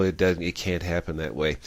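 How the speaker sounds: ordinary delivery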